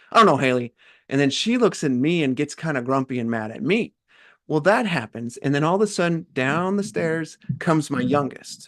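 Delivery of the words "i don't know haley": put-on, very short, snapped-off delivery. Retelling snapping at a daughter while grumpy: imitating own curt snap. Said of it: "That's all tone".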